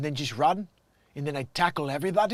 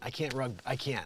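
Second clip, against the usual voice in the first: ordinary delivery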